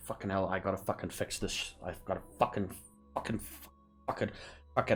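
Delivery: muttering under breath. A limping man walks out a door, muttering under his breath. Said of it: "he's muttering under his breath".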